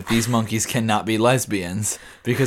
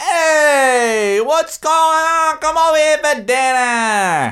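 put-on very high, loud, brash holler in a New York accent; 5 dB louder than usual. Asked for an example, speaker imitates New Yorkers, imitating New Yorker yelling. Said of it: "New Yorkers always yelling about something".

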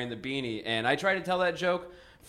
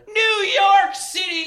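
upset shout, very high and loud; 7 dB louder than usual. Upset that she must move to New York, the speaker is retelling a shout at her. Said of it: "I just shouted at her".

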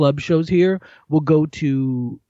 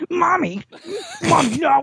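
very high, sing-song put-on voice. Acting out a scene, doing a man's voice: put-on imitation voice. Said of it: "You do his voice so good, dude. It's so perfect".

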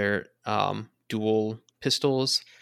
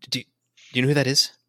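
hushed whisper; 3 semitones higher than usual. Voicing a shocked character asking about an arrival: whispering. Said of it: "he sort of whispers".

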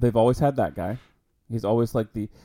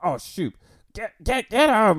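high, slow, drawn-out, cowardly villain cry; 10 semitones higher, 3 dB louder than usual. Retelling Grievous running from the Jedi: Grievous impression. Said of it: "he'd be like".

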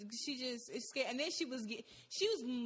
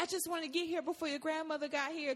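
fake concerned tone, pitched up; 5 semitones higher than usual. Retelling what an aunt said when picking them up: imitating a fake concerned tone. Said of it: "trying to sound all fucking concerned".

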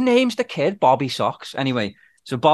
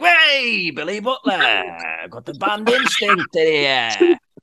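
very slow put-on radio DJ announcer voice. Retell how they changed voice once back on air after swearing, imitating their on-air radio voice. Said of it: "they didn't speak in the same voice".

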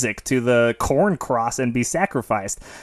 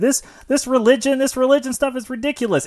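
put-on angry screaming, higher pitch; 12 semitones higher than usual. Retelling a movie scene where the adult in the room is screaming: imitating Bert screaming. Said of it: "he's screaming, like".

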